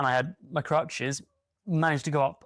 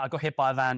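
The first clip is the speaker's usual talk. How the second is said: mock deadpan, flat and expressionless delivery. Retelling how one answers people asking about an injury: imitating own deadpan delivery.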